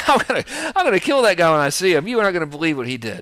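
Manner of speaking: joking, laughing delivery. Speaker showing how the words would sound said while laughing, acting out laughing while talking. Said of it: "I'm like shrugging and laughing. I'm saying".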